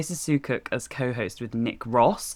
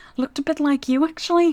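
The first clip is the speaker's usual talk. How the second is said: put-on very high-pitched, raised voice in a Scouse accent; 5 dB louder than usual. Retelling what your dad said while playing the policeman, in a Scouse accent. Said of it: "like in his Scouse accent".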